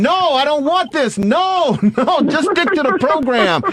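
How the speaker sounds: play-acted yelling, high-pitched. Retelling reacting to a play on television: imitating own yelling. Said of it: "I'm yelling at my television monitor saying".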